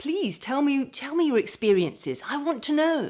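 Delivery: fast, animated sing-song tune, rising at the end. A presenter demonstrates an engaging delivery to the camera; fast with up-and-down pitch. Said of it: "I'm talking quite fast... talking up and down and up and down, and sometimes go up at the end".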